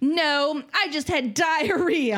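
loud announcing voice. Retelling how he answered at lunch, announcing to the whole restaurant, loud announcement. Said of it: "announced it really loudly to the whole restaurant".

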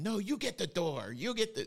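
put-on very high, shrill yell. Retelling how a mom inside yelled at her son to answer the door: imitating a mom yelling. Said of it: "you can hear mom yelling".

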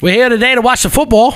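awful fake Irish accent, very high. A host jokingly pretends to broadcast from Ireland, in a bad Irish accent. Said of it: "Is that your Irish no. accent?".

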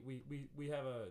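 ordinary talk

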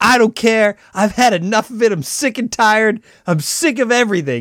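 high, freaked-out screaming, totally losing it. Retelling a TV scene where a character loses it: imitating someone yelling. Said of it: "She's yelling and screaming".

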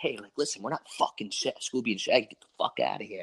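hushed stage whisper under the breath. Telling how a coworker's kid kept coming up to them: imitating a whisper. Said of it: "I just want to whisper to the kid".

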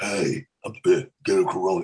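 breathy deep voice. Explaining how to build an imitation, doing a Vin Diesel impression. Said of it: "breathy or airy or deep".

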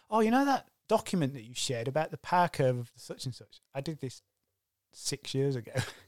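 ordinary delivery

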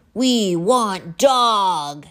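loud roaring troll bellow, "dog" drawn out. Five waiting trolls run toward the narrator, bellowing. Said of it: "they bellowed".

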